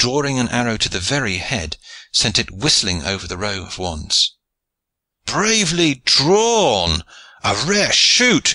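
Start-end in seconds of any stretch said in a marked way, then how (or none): 5.3-8.6 very slow, raised crowd shout, long and stretched. Bystanders reacting to Johnston's arrow shot down the valley, shouted. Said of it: "shouted the bystanders".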